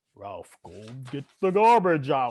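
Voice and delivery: low, deep, mock growling voice. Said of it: "He got that deep ass voice".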